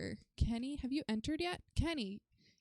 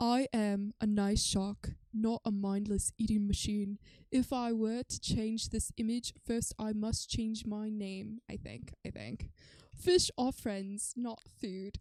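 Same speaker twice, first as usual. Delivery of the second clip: bad, cringeworthy, put-on Australian accent; 4 dB louder than usual. Retelling a favorite Finding Nemo scene, quoting the shark in a cringy Australian accent. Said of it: "my Australian accent is gonna be really cringy".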